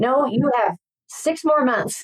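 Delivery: high, drawn-out voice, talking-back tone. Retelling yelling back at the tv news: imitating yelling at the tv. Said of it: "yelling at the T V".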